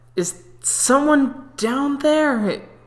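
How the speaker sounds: drowsy, sleepy voice. Voicing a character as she groggily looks down: groggy voice. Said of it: "as she's groggily looking down".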